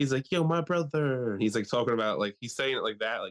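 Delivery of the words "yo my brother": high, stiff, put-on slang voice.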